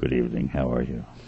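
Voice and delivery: deep, low, subtle voice.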